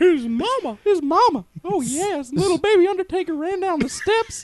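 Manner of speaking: flamboyant, very high, loud, over-the-top Southern drawl. Telling a story about the Undertaker's mama, in a Paul Bearer impression. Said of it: "You sound just like him".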